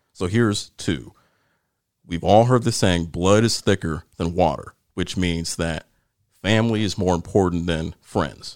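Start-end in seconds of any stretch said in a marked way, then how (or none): none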